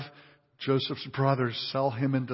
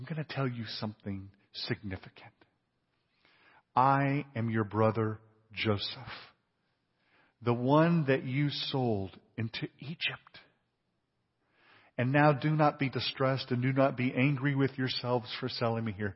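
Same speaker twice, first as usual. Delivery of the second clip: acted-out whispered delivery. Acting out Joseph revealing himself to his brothers, whispering. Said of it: "he's gonna whisper now".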